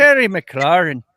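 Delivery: very loud, booming, put-on Scottish accent. Saying a player's name for laughs: scottish accent.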